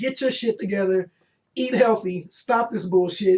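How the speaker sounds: ordinary delivery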